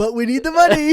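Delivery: high, loud, spoken through laughter.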